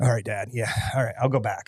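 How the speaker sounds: put-on tearful, quivering voice. Retelling a son's tearful reply to his dad: imitating a tearful quivering voice. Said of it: "through tears and a little quivering lip".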